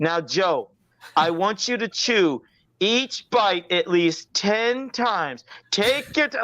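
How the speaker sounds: slow, drawn-out, taunting mocking tone. Retelling what he said at dinner: imitating him mocking. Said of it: "he was mocking me".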